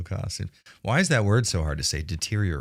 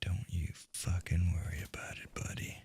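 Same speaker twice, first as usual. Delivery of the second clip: sneaky, stealthy voice, much quieter; 13 dB quieter than usual. Being stealthy in a game, the player talks in a stealthy voice. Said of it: "I do this voice when I'm being stealthy".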